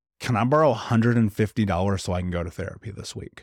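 ordinary talk

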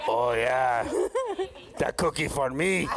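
drops low, then swings the pitch around. Urged to say it in a voice, the speaker answers in Cookie Monster voice. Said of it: "in Cookie Monster voice".

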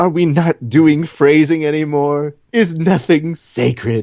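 mock innocent voice. Retelling a line Kevin said, imitating Kevin's innocent tone. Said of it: "he did say in a very innocent tone".

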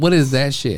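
plain

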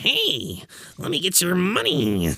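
very high, swooping, shady-sounding carny patter. Describing the original bowler-hat mascot, Chuck E. Cheese carny voice. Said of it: "shady, carny bastard".

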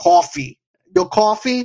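put-on light Brooklyn accent on the word "coffee". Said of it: "You used that little Brooklyn accent".

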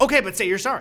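shouting. Retelling how they react to a reality show: imitating yelling at the TV. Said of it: "yelling at the T V".

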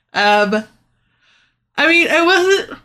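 talking through a yawn. Replying to the other speaker in a conversation, yawning mid-sentence. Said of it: "Sorry, yawning".

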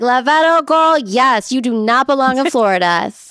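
femme-coded, feminine-sounding delivery. Joking about how God's voice sounds, the speaker voices God: femme God voice. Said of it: "It's femme, okay?".

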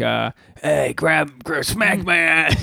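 slow, put-on Italian accent. Describing what he says in bed, in an italian accent. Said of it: "I don't know why I sound like Italian".

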